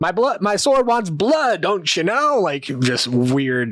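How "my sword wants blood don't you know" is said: taunting character voice, much higher. Narrating a game scene where Temin swings his sword at Kavar; Temin taunting Kavar. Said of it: "taunting Kavar".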